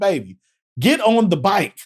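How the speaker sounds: exasperated, angry, snapped out, pitched high. Retelling how Butch speaks to his girlfriend, retelling Butch's yell. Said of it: "He starts yelling at her".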